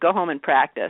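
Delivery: put-on stern, severe tone. Retelling a banjo teacher's reply to complaints: imitating a glaring teacher. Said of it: "glares at me".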